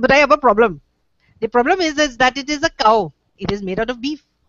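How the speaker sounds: put-on Indian accent in a boyish voice. Retelling a boy talking to his mommy, in a put-on Indian accent. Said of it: "the Indian accent".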